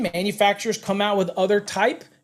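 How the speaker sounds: ordinary talk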